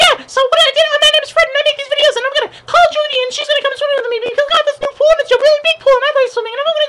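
very high, loud put-on voice. Speaker imitating a YouTube kid's video, in a high-pitched Fred voice. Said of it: "really high voice".

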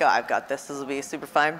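normal talking voice

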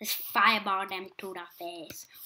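strange, put-on, low, soft odd voice. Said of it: "Why am I talking like that".

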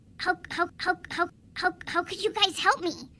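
heavy, bad stuttering, stammering hard over "how". Asking others for help in an animated kids show: heavy stuttering. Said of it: "that was some very bad stuttering you did".

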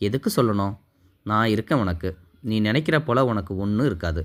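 ordinary delivery

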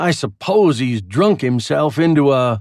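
ordinary delivery

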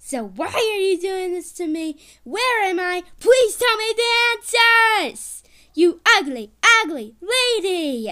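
high, loud, furious angry yelling. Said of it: "I am so mad right now".

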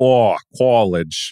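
put-on Boston accent, o of "college" said as aw. Pointing out how Kevin says an O, imitating Kevin's Boston accent. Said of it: "Whenever Kevin says an O, like an aw".

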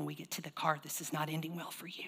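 low, very quiet, hushed mafia-style menace. Showing how to warn a child quietly: soft mafia-like threat. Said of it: "if you talk real soft".

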